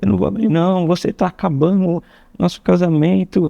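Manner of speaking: play-acted high, weepy, tearful sobbing voice. Retelling a quarrel through a locked bedroom door, imitating someone crying. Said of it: "E começava a chorar".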